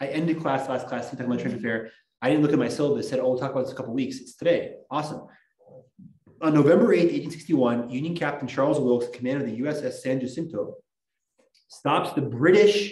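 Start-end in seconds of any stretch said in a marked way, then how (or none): 12.2-12.9 word "British" leaned on hard, strongly stressed. Lecturing a class on the Trent Affair, with stress on British. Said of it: "emphasis on British".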